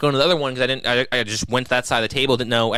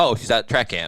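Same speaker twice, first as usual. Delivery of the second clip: casual, matter-of-fact tone of obviously; 2 semitones lower than usual. Retelling what Jim Jam answered at the wedding: tone of obviously. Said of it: "he said it with the tone of, like, "Obviously."".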